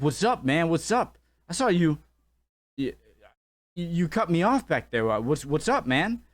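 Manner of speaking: aggressive, confrontational voice.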